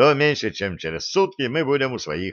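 plain reading voice

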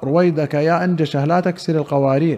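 plain

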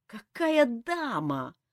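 groaning. Narrating a hero's exclamation as he realizes what he forgot, groaning. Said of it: "застонал Элмар".

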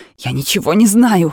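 sudden, loud squealing outburst. Narrating a story, a woman being gently questioned answers with a shrill squeal. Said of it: "взвизгнула она".

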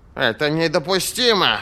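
single barked exclamation, sharp. The dimwit responds to the report about the army, barked. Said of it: "рявкнул тупица".

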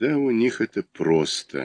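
drawn-out, musing. The narrator replies to friends discussing a man's new car, thoughtful drawl. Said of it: "протянул я задумчиво".

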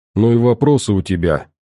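ordinary delivery

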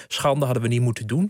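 plain

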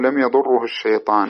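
ordinary talk

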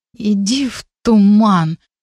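groaning throughout the words. Narrator reading a sister being woken by her brother: groaned. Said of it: "простонала я".

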